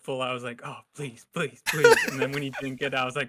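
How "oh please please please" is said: very loud, hopeful, begging tone. Retelling hoping an actor would win: imitating own hopeful pleading. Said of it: "so hopeful".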